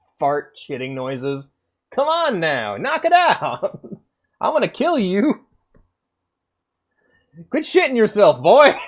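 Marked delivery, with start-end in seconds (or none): 2.0-8.8 very high, loud, swooping cartoon rooster voice. Scolding a boy while imagining Foghorn Leghorn, Foghorn Leghorn voice. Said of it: "I'm imagining Foghorn Leghorn".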